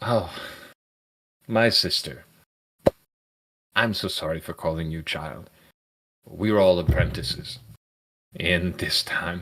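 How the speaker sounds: a little deflated, crestfallen. Game master voicing a druid character after she hesitates, deflated. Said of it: "she kind of deflates a little bit".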